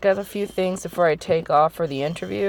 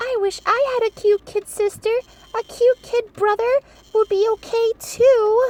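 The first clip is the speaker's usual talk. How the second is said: very high, small, mousy character voice. Voicing a character during the clock tower murder mystery, in a little mousy voice. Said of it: "that little mousy voice for her".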